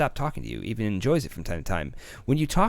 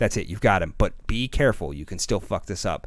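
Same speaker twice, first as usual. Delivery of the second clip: ordinary talk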